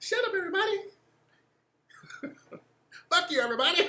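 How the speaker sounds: very high, squeaky puppet voice. Retelling how the kids play with the Crispy puppet: Crispy puppet voice. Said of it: "be fucking with the Crispy puppet".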